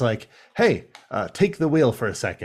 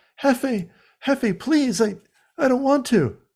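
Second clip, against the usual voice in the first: put-on whimpering voice, much higher pitched; 13 semitones higher than usual. Recapping a show episode, the speaker imitates Pablo pleading and whimpering. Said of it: "he's like pleading and like whimpering and crying".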